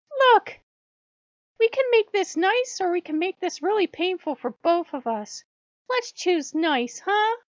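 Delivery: very high, loud, booming, bright, chipper sing-song. Reading a story, the fox calls out to a house over Halloween candy: chipper voice. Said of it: "called out in a chipper voice".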